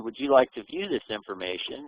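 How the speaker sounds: usual speaking voice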